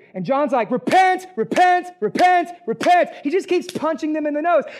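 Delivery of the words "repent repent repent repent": loud, booming, drawn-out high shout. Speaker acts out John saying it again for the people in the back, retelling a shout. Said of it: "so the people in the back can hear you".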